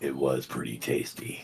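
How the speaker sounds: quiet, low, breathy, hushed near-whisper. Reluctantly turning to a stranger who asked about the beef, answering in a low voice. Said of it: "in my low, voice, I was like".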